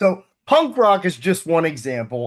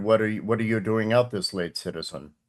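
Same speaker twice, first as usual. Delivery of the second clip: robotic agent voice, lower pitch, quieter; 7 semitones lower, 6 dB quieter than usual. Game master voicing business-oriented police agents, one degree shy of Cybermen. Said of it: "I play them as like one degree shy of Cybermen".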